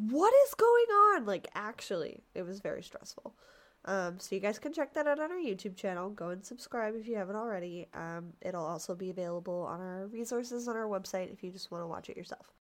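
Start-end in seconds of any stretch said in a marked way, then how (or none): 0.0-1.2 high-pitched, loud, stressed, bewildered outburst. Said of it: "I was like".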